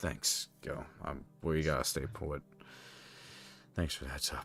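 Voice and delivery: whispered, hushed, breathy, utterly defeated mutter. Warned that tough times are coming, one of them thanks the group, completely defeated. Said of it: "he says in a completely defeated manner".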